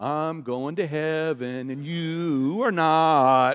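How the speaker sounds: very slow, irritating drawl, "not" drawn out long. Speaker voices what a believer's way of living seems to say, in a really irritating voice. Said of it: "in a really irritating voice".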